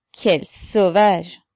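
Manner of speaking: sardonic, ironic laughing tone. The officer adds a remark about the mother's writing, with an ironic laugh. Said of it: "avec un rire ironique".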